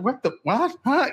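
high, startled, freaked-out put-on reaction. Describing a TV clip, retelling Roseanne's reaction; imitating freaked-out Roseanne. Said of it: "kind of freaked out".

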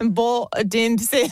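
loud, belted-out bad Aussie accent. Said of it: "I'm so bad".

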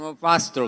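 normal talking voice

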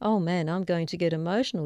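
normal talking voice

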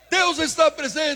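loud, high-pitched shout.

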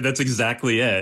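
normal talking voice

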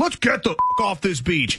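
put-on heavy, swooping New Jersey dude accent. Retelling a movie line that sounds like a dude from Jersey: Matt Damon as a Jersey dude. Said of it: "he talks like a dude from Jersey".

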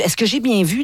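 ordinary talk

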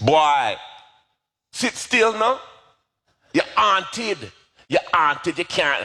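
put-on high-pitched Jamaican accent. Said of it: "in her Jamaican accent".

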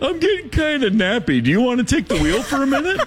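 high, quick put-on lip-biting guy voice. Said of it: "he's the kind of guy who's gonna look at you an hour into the drive and go".

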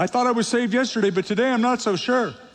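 high, rushed, anxious doubting voice. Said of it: "So if you ever worry".

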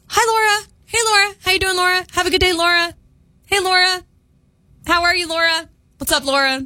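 self-assured, kind greetings. Speaker imitates a friendly man who greets her daily: imitating confident kind greetings. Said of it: "he says it so confidently and so kind".

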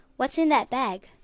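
plain

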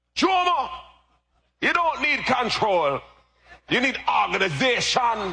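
put-on very high-pitched voice with a Jamaican accent. Speaker retells his father's advice before the wedding, in a jamaican accent. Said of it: "Jamaican accent".

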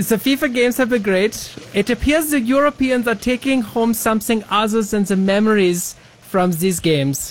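high-pitched, exaggerated German accent.

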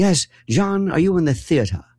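refined faux-British Mid-Atlantic theater accent. Recalling people who put on the Mid-Atlantic accent: Kitty Carlisle Hart Mid-Atlantic accent. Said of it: "Why do you sound like that?".

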